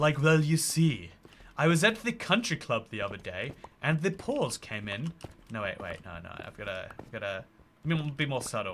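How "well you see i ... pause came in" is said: fake upper-class posh accent. Answering a chat question by trying a put-on posh accent. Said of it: "I could pass for posh if I wanted to".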